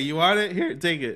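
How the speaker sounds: voice cracking mid-line. A speaker mid-rant to another speaker, voice cracking. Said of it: "my voice crack?".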